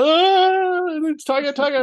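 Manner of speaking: mock freaking-out wail, very high, very slow, drawn out. Retelling how the others reacted to a tiger: imitating people freaking out. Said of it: "and freaking out".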